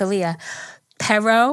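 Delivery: put-on Spanish with heavy American accent.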